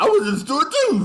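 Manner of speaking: shrill, very high, very loud dopey voice. Imitating the other speaker's story to tease him: imitating a friend sounding like an imbecile. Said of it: "I gotta make you sound like an imbecile".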